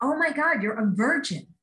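abrupt, unfiltered, sudden blurted outburst. Retelling what a woman blurted out in a waiting room: imitating a loud blurt. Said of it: "a voice that I am convinced had like a secret megaphone".

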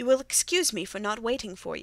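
plain reading voice

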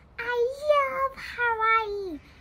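high, loud, cried-out exclamation. Reading Pip's line to Kit before the plane has landed, cried out. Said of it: "cried Pip".

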